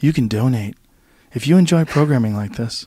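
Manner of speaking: drowsy, lulling public-radio announcer voice. Joking with Joe about public-radio talk, doing an NPR voice. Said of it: "you're putting me to sleep".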